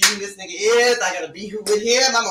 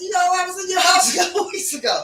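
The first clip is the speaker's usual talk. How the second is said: put-on very high, girlish little-girl voice; 11 semitones higher than usual.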